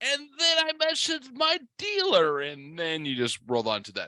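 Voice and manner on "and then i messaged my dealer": offhand mocking voice, pitched way up high. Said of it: "You're like".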